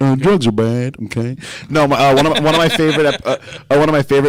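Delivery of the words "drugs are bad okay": halting cartoon teacher voice, lecturing tone. Doing a cartoon character's catchphrase: Mister Mackey impression. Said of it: "it's Mister Mackey".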